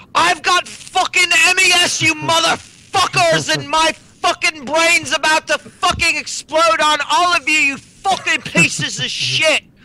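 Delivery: shrieking, very high, loud, unhinged ranting voice. Quoting someone screaming at everyone around them, retelling a scream. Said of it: "just fucking screaming like".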